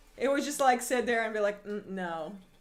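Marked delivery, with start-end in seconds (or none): 1.7-2.4 very low, flat, level, unmoved deadpan monotone. Imitating Victor answering an interview question: monotone Victor voice.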